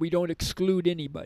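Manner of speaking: ordinary delivery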